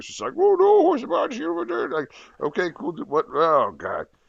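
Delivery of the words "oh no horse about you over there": put-on very high-pitched, mumbled, mushy Cajun accent. Mocking a hard-to-understand movie accent: Wilford Brimley mumbled Cajun accent. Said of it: "couldn't understand half the shit Wilford Brimley was even saying".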